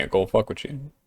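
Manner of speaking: mock-sad monotone. Quoting funny lines from a movie Daniel Kaluuya is in, sad monotone Daniel Kaluuya impression. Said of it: "the saddest like monotone voice".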